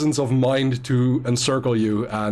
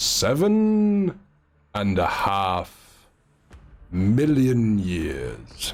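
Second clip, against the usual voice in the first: deep rumbling bass, swooping, "seven" stretched out; 4 semitones lower than usual. Playing a character asked what it needs, in a rumbly deep voice. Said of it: "you get back in this rumbly deep voice".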